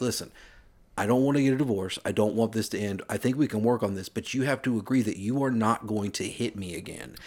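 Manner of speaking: normal talking voice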